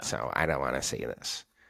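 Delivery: put-on rude, dismissive girl voice, low snotty mutter. Imitating a girl who checked her phone mid-conversation, in a rude girl voice. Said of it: "That was a really rude girl voice".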